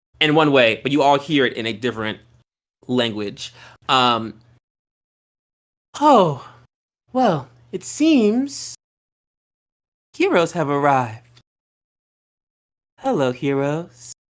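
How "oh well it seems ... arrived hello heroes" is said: angelic, choir-like voice, slow and even. A woman seated on a horse greets the arriving heroes, in an angelic voice. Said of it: "And her voice is angelic".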